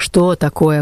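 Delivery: grouchy, grumpy, grumbling tone. The wardress answers a prisoner calling to her from the stair landing: grumbling. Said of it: "ворчливо отозвалась надзирательница".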